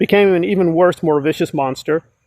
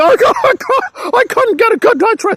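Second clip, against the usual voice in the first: very high, weepy crying whimper. Imitating someone complaining about a bad night: imitating someone crying. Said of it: "And she's crying".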